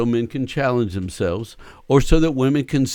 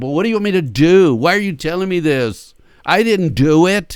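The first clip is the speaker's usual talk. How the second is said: raised, angry, defensive outburst; 5 semitones higher, 5 dB louder than usual. Acting out a man's reply when someone vents their pain, mock-angry outburst. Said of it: "You can hear the anger".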